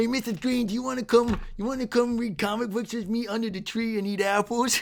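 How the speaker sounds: put-on Boston or New York accent. Imitating a kid talking to Mrs. Green, in a put-on Boston accent. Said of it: "sound like they're from New York or Boston".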